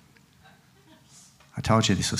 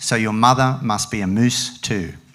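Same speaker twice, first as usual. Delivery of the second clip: usual speaking voice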